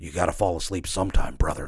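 a hushed whisper, very close up. Retelling what the opponent in the ring said: imitating a whisper. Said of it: "he whispers in my ear".

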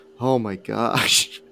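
slow, deep sighing exhale. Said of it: "let out this deep sigh and just go".

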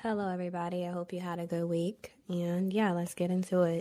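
put-on ASMR-style voice. Greeting the group at the start of the episode, in a soft ASMR-style voice. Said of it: "You should do ASMR videos".

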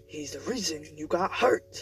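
rough, harsh, hushed whisper. Narrator reads his insistent reply in the echoing foyer, in a rough whisper. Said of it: "he insists in a rough whisper".

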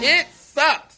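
blurted out very high-pitched and loud. Reacting to a segment intro with a catchphrase: Jay Sherman impression. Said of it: "From Jay Sherman".

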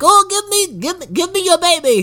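put-on shrill, very high, grasping old granny voice. Comparing a witch to Granny Van Dam from Bleeder: Granny Van Dam voice. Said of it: "It's Granny Van Dam from Bleeder. She's like".

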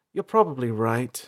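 voice tapering and fading out. April answers Beefold, then her voice trails off. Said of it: "April's voice trailed off".

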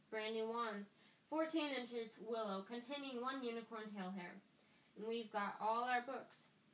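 ordinary delivery

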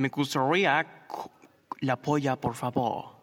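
put-on Spanish spoken with an American accent. Retelling ordering food in spanish, acted out: gringo accent in spanish. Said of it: "Con acento gringo y todo".

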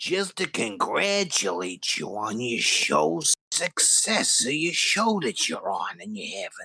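put-on acted elderly man voice. Calling to congratulate on the show's success as the internet's CEO: Stan Lee voice. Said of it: "You sound, uh, a little bit like Stan Lee".

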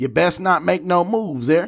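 high cattle-rancher voice. Teasing a co-host who sounds like a rancher, answer in a cattle-rancher voice. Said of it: "you sound like you grew up rounding up the cattle".

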